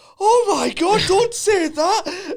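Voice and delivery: very high, very slow, acted frightened pleading tone. Retelling a friend's reaction to a ghost remark: imitating Stephen sounding scared. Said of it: "it's the most scared I've seen".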